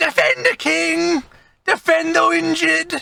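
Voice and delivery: very high, screeching, shrill goblin war cry. Game master voicing a goblin in a fight, shouting goblin. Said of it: "this goblin shouts".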